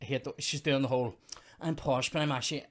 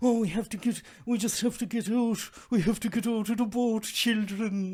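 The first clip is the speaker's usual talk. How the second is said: put-on Irish accent, pitched up; 9 semitones higher than usual. Imitating an actor telling her kids to get off the boat: put-on Irish accent. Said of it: "she plays Irish in this".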